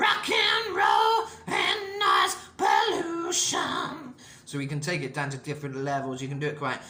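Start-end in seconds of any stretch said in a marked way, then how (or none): 0.0-4.1 very high, very slow, gritty rock voice. Showing a listener how to talk all the time in a gritty rock-and-roll voice. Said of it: "You can talk all the time in that voice".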